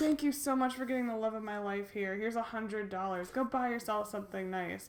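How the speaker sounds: normal talking voice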